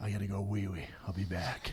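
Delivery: put-on dead-serious, matter-of-fact tone. Retelling what the toughest security guy said at a concert: imitating a dead-serious tone. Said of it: "He's dead serious".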